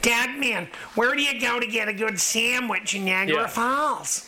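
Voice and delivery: American-sounding voice. Imitating a dog-training client who calls the speaker Dog Man, Kimberly's American accent. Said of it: "That's how she sounds in my head, right? ... Because she's got that American accent".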